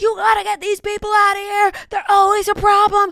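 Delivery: put-on shrill, very high, angry half-yell. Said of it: "he starts screaming".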